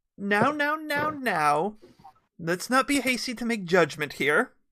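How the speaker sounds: high, loud call from offstage, cutting in. Game master voicing someone shouting from behind the group, shouting. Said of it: "you hear a voice from within the from behind them shout".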